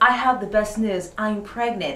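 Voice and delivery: ordinary talk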